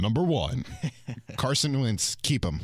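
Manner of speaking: put-on sports announcer delivery. Reading out the first Twitter question in a put-on announcer voice. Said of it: "Let me get my announcer voice".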